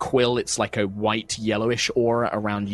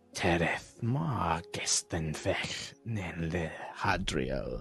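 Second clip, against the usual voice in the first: throaty, low, guttural, very husky voice; 5 semitones lower, 11 dB quieter than usual. A storyteller voices a woman speaking an alien tongue: guttural, very husky voice. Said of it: "in this kind of guttural, very husky voice".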